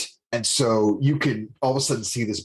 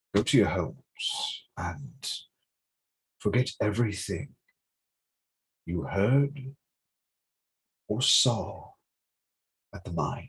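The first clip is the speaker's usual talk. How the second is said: unhurried, slow, disembodied voice; 2 semitones lower, 5 dB quieter than usual. Voicing an invisible figure warning the group to turn back: voice of an unseen invisible figure. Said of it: "hear this voice".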